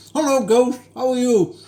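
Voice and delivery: talking through a full mouth. Greeting someone with a mouthful of chocolate, talking with mouth full. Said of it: "I've got a mouthful of chocolate and I can barely speak".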